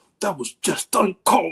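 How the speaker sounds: hyper-focused, intense on-camera commentator voice. Describing how a pundit tries to sound on camera: Stephen A. Smith impression. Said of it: "trying to do his best Stephen A. Smith impression".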